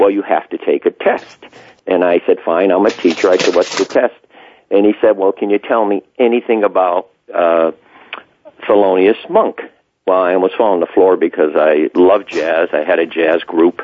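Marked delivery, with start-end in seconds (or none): none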